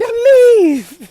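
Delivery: high, loud, snapping mock yell. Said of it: "And he's like".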